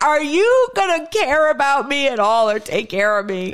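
play-acted weepy, tearful voice through sobs. Speaker recounts coming out of the room to confront him: imitating her own crying. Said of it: "until I came out of the room crying".

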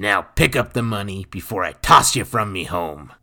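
rough, unpolished, gruff and brusque voice. No longer hiding his natural language, a man addresses someone he distrusts, gruff. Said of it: "Nathan was gruff".

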